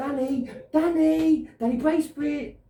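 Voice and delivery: high, loud, belted shout.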